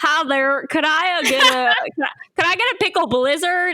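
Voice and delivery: disguised voice in a fake country accent. Retelling disguising her voice so she won't be recognized while ordering: put-on country accent. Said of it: "I decided to do a country accent".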